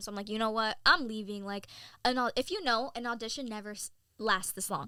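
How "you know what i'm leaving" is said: ordinary talk, nothing marked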